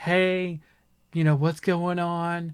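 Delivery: slow, sweet, soothing tone, easing in. Retelling a game clip of a detective questioning a girl: imitating Cole Phelps being soothing. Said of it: "trying to be soothing and stuff".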